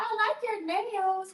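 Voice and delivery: put-on high slow little-girl voice. Retelling what a five-year-old niece says, imitating niece Zuri. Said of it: "She is five".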